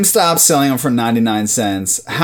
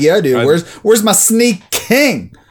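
mock annoyed, pissed-off complaining tone, higher; 4 semitones higher than usual. Imagining getting the same free toy three times: acting pissed off. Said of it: "I'd be pretty fucking pissed".

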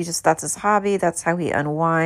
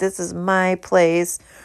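ordinary talk, nothing marked

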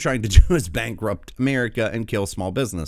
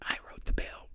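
mock creepy whisper, quieter. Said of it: "Creepy whispering".

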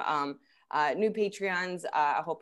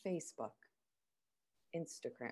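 mock very quiet, grave, solemn, hushed low voice; 5 semitones lower, 14 dB quieter than usual. Teasing the other speaker for sounding so serious, mock-serious tone. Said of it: "You're like".

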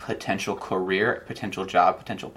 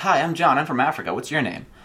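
put-on high, loud, eager, beaming twelve-year-old voice. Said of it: "I would just walk up and be like".

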